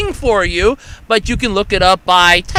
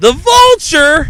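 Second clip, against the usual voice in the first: play-acted, sudden, high, blurted shriek; 7 semitones higher, 4 dB louder than usual. Speaker recalling a radio contest he heard while driving, retelling his own scream. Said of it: "I screamed this".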